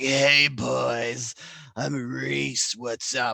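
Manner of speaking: put-on very slow raspy old-smoker drawl, boys stretched. Joking how Reese Witherspoon could play an old smoker lady: old smoker lady voice. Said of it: "old smoker lady where she's like".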